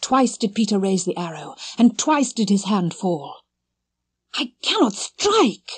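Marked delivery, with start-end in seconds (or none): 4.3-5.8 awed, higher and slower. Peter, his hand falling twice as he raises the arrow, speaks with awe. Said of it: "he said with awe".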